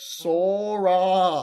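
awful loud, high, slow bird voice.

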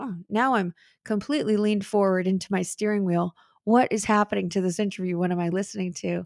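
ordinary talk

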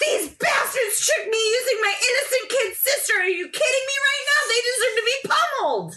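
very high, shrill, furious, very loud screaming. Streamer still upset and unable to process the anger, screaming at her. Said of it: "I'm really loud right now".

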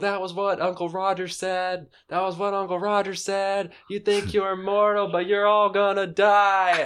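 very high, shrill, loud screaming over a din. Retelling a story, the speaker acts out a man screaming over all the noise. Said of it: "he's screaming over all this noise like".

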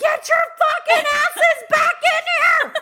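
very high-pitched, very loud, shrill screech. Retelling screaming at two figures outside the condo at midnight, retelling a scream. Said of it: "I'm screaming at midnight".

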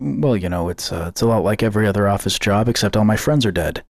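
silly public-radio host announcer delivery. Retelling someone leaning into the mic, in NPR voice. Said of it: "he's doing that stupid NPR voice, and he's just like".

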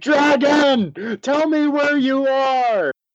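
shouting. Game player using Persuasion on a dragon, yelling. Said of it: "I'm going to yell at this guy".

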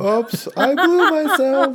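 mock goofy voice, high, slow, stretched out.

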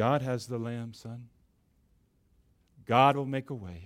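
acted trembling voice. Retelling Abraham answering his son, with a trembling voice. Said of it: "with a trembling voice perhaps".

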